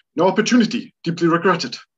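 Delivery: sharp, clipped words, very loud and high-pitched. Imitate the actor answering why he never married, in O'Toole's sharp, clipped voice. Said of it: "It's just such a sharp voice".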